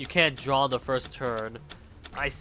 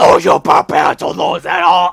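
put-on heavy metal voice, much louder; 3 semitones higher, 14 dB louder than usual. Reading a duel scene aloud, voicing Yami Bakura in a heavy metal voice. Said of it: "the heavy metal voice".

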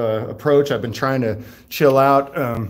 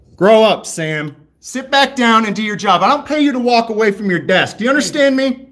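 loud yelling at a raised pitch; 9 semitones higher, 4 dB louder than usual. Yelling through thick glass at a records custodian, yelling. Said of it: "You don't need to yell, man".

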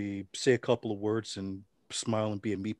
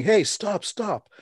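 very high-pitched, screamed yell; 10 semitones higher, 6 dB louder than usual. Retelling how a man ran across the street toward them, imitating someone screaming. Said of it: "he's screaming".

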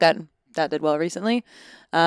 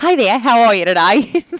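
put-on loud, aggressive, over-the-top Australian accent. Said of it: "I just went in aggressive Australian".

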